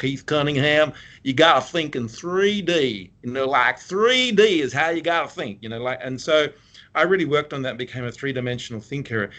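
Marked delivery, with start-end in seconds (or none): 0.0-5.6 weak put-on Texan drawl, slow, shaky, raised pitch. Quoting a business school teacher, in a bad Texan accent imitating Keith Cunningham. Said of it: "I can't do a great Texan accent, but it was like this".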